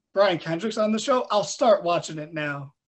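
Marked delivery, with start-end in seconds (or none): none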